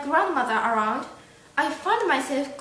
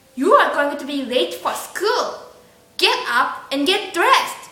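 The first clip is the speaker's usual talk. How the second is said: put-on strict, stern, scolding grandmotherly voice; 5 dB louder than usual. Recalling the grandmother waking the speaker for school: imitating grandmother's stern voice. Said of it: "her stern voice".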